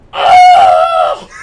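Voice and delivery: very high, loud, panicked scream.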